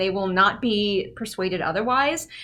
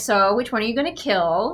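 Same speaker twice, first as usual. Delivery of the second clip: sassy way of speaking.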